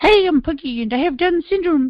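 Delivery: put-on high-pitched Irish accent. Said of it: "I'll try and do the accent".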